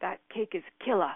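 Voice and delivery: loud, gushing put-on Australian accent. Retelling what a sister-in-law's mom says about food: imitating an australian accent. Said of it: "she's Australian and she has this accent".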